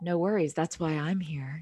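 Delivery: low, sultry delivery. Reassuring the other speaker, who doesn't know the story, low sultry voice. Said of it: "I'm doing this like low. Sultry voice today".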